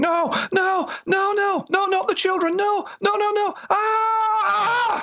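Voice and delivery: mock screaming, very high, slow and drawn out. Retelling how a man suddenly started screaming, retelling a scream. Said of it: "he was screaming".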